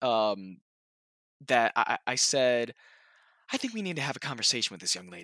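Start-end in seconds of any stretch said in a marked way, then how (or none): 3.5-5.2 rattled-off, swooping, tumbling breakneck very fast delivery. Saying a recorded line in the Gumball voice: very fast Gumball voice. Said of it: "it's very fast".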